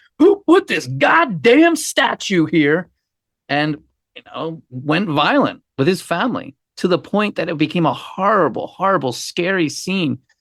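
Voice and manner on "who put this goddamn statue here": mock high, enraged screaming outburst. Acting out how he probably reacted after tripping over the statue: imagining someone screaming. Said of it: "he's probably screaming".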